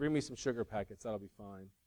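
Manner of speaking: play-acted, very soft, hushed sarcastic brush-off. Speaker retells a man answering a waitress after the kitchen closed, retelling a sarcastic reply. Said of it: "he sort of sarcastically says".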